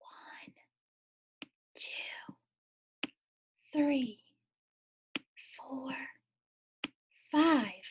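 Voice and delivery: soft, breathy whisper. Showing a learner how to count to five in a whisper: whispering. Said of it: "Can you whisper and count the numbers".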